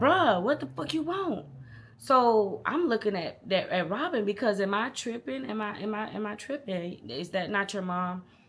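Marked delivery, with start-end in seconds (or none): 0.0-1.5 high-pitched, rude, disrespectful holler. Retelling how a man answered his mother calling him, retelling a yell. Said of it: "So he's like".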